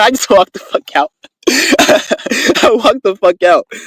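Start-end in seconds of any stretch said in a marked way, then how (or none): 1.5-3.7 slow, laughing through the words. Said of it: "I started laughing".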